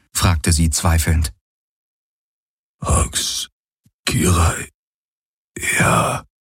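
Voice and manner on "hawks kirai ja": murmured words, fading with each word. A man answers a woman's doubtful question, murmured and fading. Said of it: "murmelte er, aber er wurde leiser".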